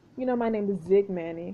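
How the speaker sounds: normal talking voice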